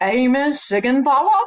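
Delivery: loud put-on Kentucky accent. Retell the man reaching your name in the class roll call, imitating his Kentucky accent. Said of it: "had never lost his Kentucky accent".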